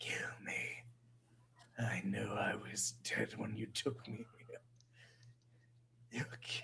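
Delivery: faint, hushed, breathy dying whisper. Voicing a captive melting from inside who asks the party to kill him: voicing a dying captive. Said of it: "he looks at the four of you and he says".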